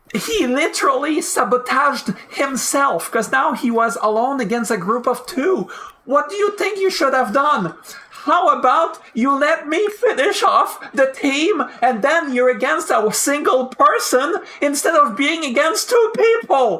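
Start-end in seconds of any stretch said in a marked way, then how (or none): 6.1-16.9 shouting, higher. Explaining a teammate's mistake in a fight: shouting. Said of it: "Sorry if I'm shouting".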